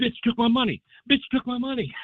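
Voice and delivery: mock yelling, very high-pitched. Retelling what Rudy shouted after his money was taken: imitating Rudy yelling. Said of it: "he's yelling about it".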